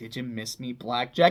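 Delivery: play-acted, smug, self-satisfied, low teasing tone. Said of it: "all smug, like".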